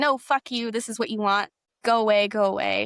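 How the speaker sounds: bitter, angry, lashing-out tone. Retelling what the teacher snapped after getting upset: imitating an angry retort. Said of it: "he was angry and was like".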